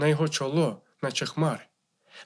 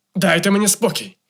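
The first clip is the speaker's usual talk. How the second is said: loud, beastly roar like an animal; 4 semitones higher, 7 dB louder than usual. The painter answers his wife in a bestial roar. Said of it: "голосом, що схожий був на звірячий рик".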